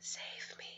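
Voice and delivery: faint, barely-there, very quiet whisper. Retelling a witness account of a woman asking for help: whispering. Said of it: "if you couldn't hear that because of my crappy voice".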